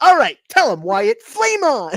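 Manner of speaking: zany, loud, high cartoon voice with swooping pitch. Retelling the dynamic between Johnny and Wyatt, as Johnny, in a cartoon voice. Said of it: "Johnny's like cartoon voice".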